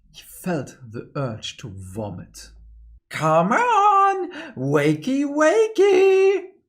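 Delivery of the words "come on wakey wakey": very high, very loud, shrill, swooping, drawn-out whine. Narrator reads a voice rousing the sleeping main character, in a whiny voice. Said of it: "That whiny voice again".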